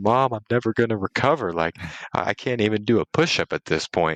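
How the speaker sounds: mock crying, sobbing, tearful pleading wail. Retelling calling mom one night: retelling own crying. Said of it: "I'm crying".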